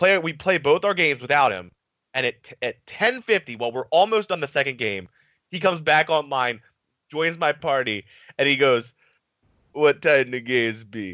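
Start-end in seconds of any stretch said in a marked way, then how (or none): 9.7-11.1 put-on relaxed, easy Jamaican accent. Retelling a teammate coming back online late: imitating Papa Reds, Jamaican accent. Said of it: "he was this Jamaican guy".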